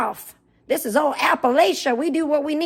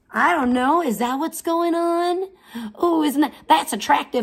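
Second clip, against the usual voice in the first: sneering, mocking backwoods hillbilly caricature voice. Mocking Gish by pretending to be her: mocking hillbilly impression of Gish. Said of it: "I know all the guys love my voice because I'm a, I'm a backwoods inbred hillbilly".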